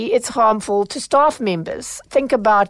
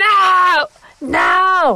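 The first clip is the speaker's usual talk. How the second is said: play-acted very slow, stretched-out, high, rising scream; 9 semitones higher, 4 dB louder than usual. Recounting a woman lacking anger management, retelling her scream. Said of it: "she was just screaming".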